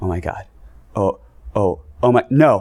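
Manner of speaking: put-on awestruck gasp. Recalling a person behind them reacting to a game's opening shot; imitating someone gasping. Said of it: "almost gasping like".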